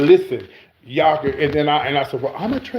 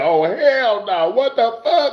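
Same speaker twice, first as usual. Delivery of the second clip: high, stretched, drawn-out screamed reaction; 9 semitones higher than usual. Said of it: "They would be screaming".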